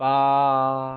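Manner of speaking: flat, steady high level tone on 八. Teaching chinese numbers, eight, high level tone on 八. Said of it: "pronounced with a high level tone, like".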